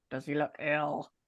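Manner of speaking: mumbling, muttering under breath. Asking in character whether a man looks ill: muttering. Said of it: "I'm just gonna mutter".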